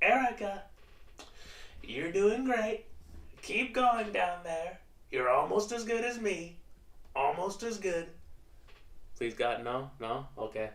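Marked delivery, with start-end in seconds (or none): 0.0-8.1 squeaky, very high, boastful, bragging voice. Talking about favourite impressions, the speaker addresses Erica in a Trump impression. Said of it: "impressions of Trump".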